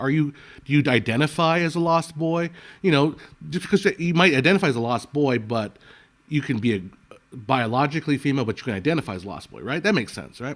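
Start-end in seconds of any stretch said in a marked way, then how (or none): none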